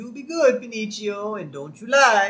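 put-on Italian accent, pitched high. Retelling a cartoon scene, doing a character's line to Pinocchio: Scratchy in an Italian accent. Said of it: "Scratchy in an Italian accent saying".

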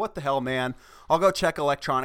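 ordinary talk, nothing marked

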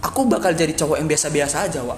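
ordinary talk

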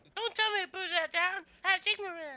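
put-on slasher villain voice. Imagining what the silent killer would say: Leatherface voice. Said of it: "I think they should make him talk".

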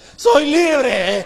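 mock joyful shout. Speaker acting out how a man shouted once free of his debt, retelling a joyful shout. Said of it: "Como grita el que ya está harto".

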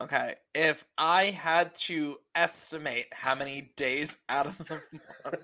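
hesitating and holding back on each bit. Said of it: "The hesitation is palpable".

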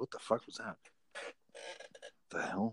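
freaked out. Reacting to something right after talking about a conspiracy, freaked out. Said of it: "now I'm all freaked out".

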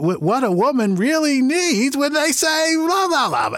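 very high, slow, stretched-out stand-up comic intonation. Retelling doing a comic's act in front of him: imitating Jerry Seinfeld's delivery. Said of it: "I'm doing this intonation".

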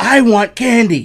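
put-on very high, very loud, shrill toddler screaming. Retelling how a three-year-old stood on a chair during a movie: imitating a child screaming. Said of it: "and just screams".

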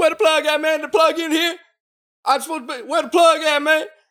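very high-pitched, insistent, demanding screaming. Telling a work story, speaker acts out a man who came up screaming: retelling a scream. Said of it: "just starts screaming".

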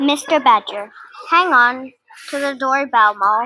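plain reading voice

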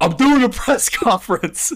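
very high-pitched, slow, drawn-out put-on drawl. Recalling a press conference: Coach O voice. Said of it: "when Coach O was like".

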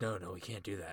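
soft, hushed, half-whispered stage whisper. Retelling a wrestling show moment: imitating Adam Pearce half-whispering. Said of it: "he's whispering".

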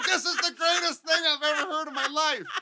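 high-pitched, delighted, over-the-top outburst.

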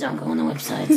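corpse character voice. Asked to do your corpse voice, warn people off the websites in that corpse voice. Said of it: "can you do your corpse voice".

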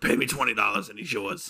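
chain-smoker's voice. Joking bit about a four-year-old going to a party, cigarette mom voice. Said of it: "Gotta give the cigarette mom voice".

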